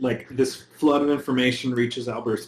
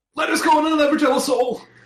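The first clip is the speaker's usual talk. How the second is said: shrill, very high scream; 4 dB louder than usual. A game player has their character scream the line out loud, screaming. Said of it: "and scream it like".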